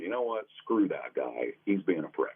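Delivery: normal talking voice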